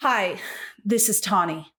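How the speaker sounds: acted out, fed-up, irritated, exasperated angry tone. Complaining about how a book character was voiced: Tawny's exasperated angry voice. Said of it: "It was always just really exasperated and angry".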